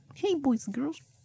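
squeaky, very high voice. Taking turns doing cartoon voices, Mickey Mouse voice. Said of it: "That was Mickey Mouse".

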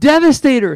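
very high, loud, panicked cry.

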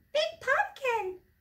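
tiny, very high, squeaky bat-like little voice. Reading a picture book aloud, voicing the bat in a squeaky little bat voice. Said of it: "It's a squeaky little voice for a bat".

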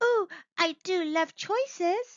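put-on sweet-toned, high old-lady voice. The old lady answers Scary Edwin Page's trick-or-treat, sweetly. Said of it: "smiled the old lady sweetly".

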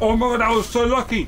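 thrilled yelling.

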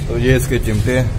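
ordinary talk, nothing marked

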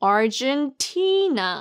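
heavy, long stress on ti in Argentina. Pronunciation lesson, modelling the word for learners: strong, long ti in Argentina. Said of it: "T를 제일 강하고 길게 발음하세요. 이렇게요".

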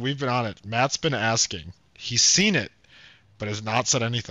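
normal talking voice

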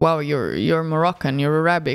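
ordinary talk, nothing marked

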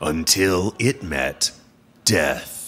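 deep, very low movie trailer narrator voice. Taking a turn in a movie trailer voiceover-off with friends, in movie trailer voiceover. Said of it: "Movie trailer off?".

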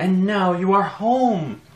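joyful. A mother speaking to her son back home, crying out happily. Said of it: "cried his mother happily".

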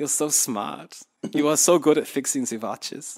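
put-on heavy German accent. Retelling what an older german lady said to him, strong german accent. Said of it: "with a very strong German accent".

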